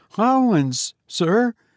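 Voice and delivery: high, quavering, trembling voice. A narrator reads the sexton answering the goblin's question, trembling. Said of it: "trembling more than ever".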